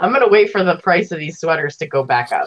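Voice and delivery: plain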